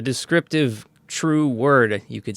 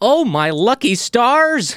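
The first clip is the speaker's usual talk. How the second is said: thrilled cry, very slow and very high; 12 semitones higher, 5 dB louder than usual. Retelling how a character reacted: imitating an excited character. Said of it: "And he's so excited".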